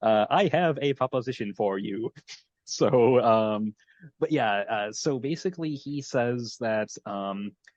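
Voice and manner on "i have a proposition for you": put-on posh British accent in a text-to-speech style voice. Speaker imitates a character's phone text-to-speech message, text-to-speech British accent. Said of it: "very much a uh, astute British accent".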